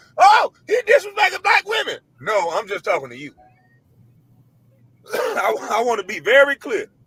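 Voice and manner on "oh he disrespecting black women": mock hollering, high and loud. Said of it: "start hollering saying".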